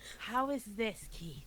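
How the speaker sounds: very quiet attempt at a whisper. Trying to talk quietly to a companion perched on the shoulder: trying to whisper. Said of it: "I should try whisper".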